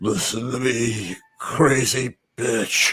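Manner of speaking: low, very slow, dragged-out geriatric voice. Trying an old Indiana Jones voice asked for by the other speaker: old Indiana Jones voice. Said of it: "work on your Indiana Jones geriatric".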